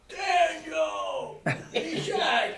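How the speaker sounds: put-on, very high, booming pulpit shout, drawn out. Retelling a minister preaching from the pulpit: imitating Reverend Koistra shouting. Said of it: "I remember that shouting".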